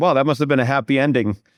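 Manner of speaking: ordinary talk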